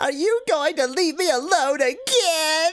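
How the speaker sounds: whiny put-on character voice. Reading a game character's line aloud: whiny character voice. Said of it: "You gave him the right voice".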